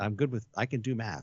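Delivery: plain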